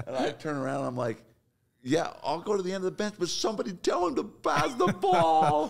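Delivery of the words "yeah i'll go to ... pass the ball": put-on shouted yell, very high, pitch climbing and swooping. Retelling a reply to the coach: imitating own yell. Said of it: "And yell it just like that".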